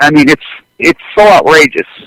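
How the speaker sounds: normal talking voice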